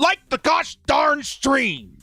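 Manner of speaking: very high-pitched, slow, drawn-out voice. Reading a viewer's message aloud, saying the quote the right way: Philip Rivers impression. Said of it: "In the words of Phillip Rivers".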